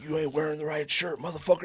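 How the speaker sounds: angry, furious in-your-face screaming tirade. Retelling how a man screamed in his bodyguards' faces, retelling a scream. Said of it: "he's like screaming in their face".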